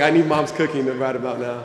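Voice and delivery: ordinary delivery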